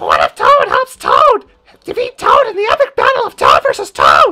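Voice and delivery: high, loud, squeaky half yell. Trying to match Charles's earlier take on the board, in a Toad voice. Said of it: "I can actually do that voice".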